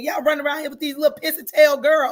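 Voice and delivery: loud, high, play-acted hollering yell. Retelling what mom said while yelling at someone: imitating mom yelling. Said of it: "I don't know who she was yelling at".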